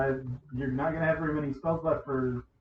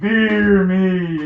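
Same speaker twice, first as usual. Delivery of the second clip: acted war cry, high and very loud; 5 semitones higher, 12 dB louder than usual. Narrating a rider rearing back on a wolf: character yelling. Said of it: "on your wolf and yell".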